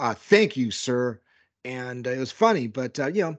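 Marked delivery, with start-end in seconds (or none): 0.1-1.2 acted-out very smug, self-satisfied tone. Retelling how the player answered the brother: imitating a smug reply. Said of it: "gave a very smug back".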